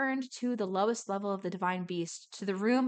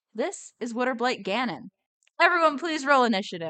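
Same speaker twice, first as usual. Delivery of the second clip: ordinary talk, nothing marked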